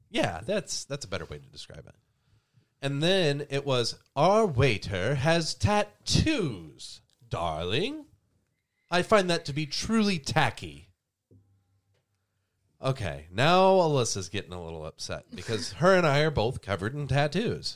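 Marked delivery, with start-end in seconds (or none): 4.1-10.8 slow, higher transatlantic drawl. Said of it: "that British low draw when he spoke".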